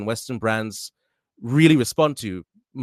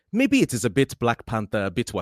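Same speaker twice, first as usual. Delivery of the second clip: imitated Nigerian accent. A speaker trying out accents on request now tries a Nigerian accent. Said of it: "Nigerian accent sounds something like this".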